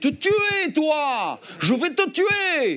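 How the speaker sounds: very high, swooping, drawn-out shriek. Retelling pinning a woman against a car by the throat, retelling a scream. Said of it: "je lui dis en hurlant".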